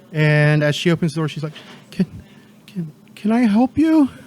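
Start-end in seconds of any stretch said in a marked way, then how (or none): 1.9-4.1 high, tearful stutter through sobs. Voicing a sobbing character answering the door: sobbing while speaking. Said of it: "she's just sobbing".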